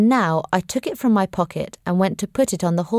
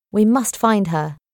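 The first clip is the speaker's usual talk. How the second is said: ordinary delivery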